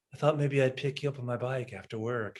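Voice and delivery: gently spoken, quiet, mild, soft voice. Correcting another speaker's version of how he says it, imitating him soft-spoken. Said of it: "He's in it soft spoken".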